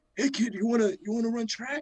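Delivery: very high, scratchy, raspy little voice. Act out the coach spotting you in the hallway on your first day, in Coach Sleep's little raspy voice. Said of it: "He's he has a little raspy voice".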